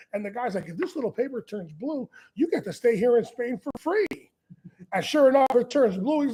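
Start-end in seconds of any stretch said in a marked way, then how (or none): 0.7-4.0 mocking, sarcastic, swooping sing-song delivery. Retelling what a customs inspector says to a suspect: imitating a sarcastic inspector. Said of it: "He's the most sarcastic prick to be in".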